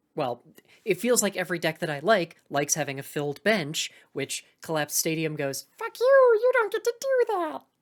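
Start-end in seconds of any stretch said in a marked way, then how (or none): 5.8-7.6 strange warped put-on voice, very high, loud. Voicing a game card that blocks the player: weird Mickey voice. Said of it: "I don't know what that voice wa-".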